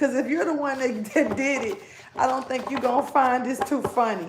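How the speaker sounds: speech broken up with chuckles, laughing through words. Explaining a reading to viewers, laughing while talking. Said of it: "I'm sorry for laughing".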